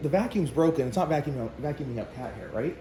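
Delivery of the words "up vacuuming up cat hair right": normal talking voice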